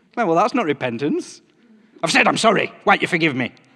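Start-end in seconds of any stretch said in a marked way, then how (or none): 2.0-3.5 self-satisfied, arrogant, haughty delivery. Acting out an apology without real repentance, in an arrogant tone. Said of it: "said in an arrogant tone".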